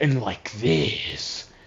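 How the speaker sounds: very slow, drawn-out, weird hammy actor voice. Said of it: "he doesn't talk like a normal person delivering dialogue".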